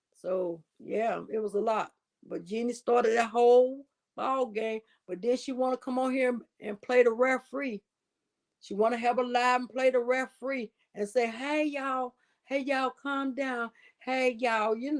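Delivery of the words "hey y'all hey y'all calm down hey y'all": put-on little sweet voice, higher pitch. Imitating someone calming people down on a live: Jeannie's little sweet voice. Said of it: "you know that voice, that little sweet, that little sweet, uh, uh, uh, voice that she got".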